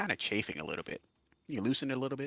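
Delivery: hushed, high, half-whispered voice. Speaking in character while a collar is put on: half-whispering. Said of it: "I'm whispering, by the way".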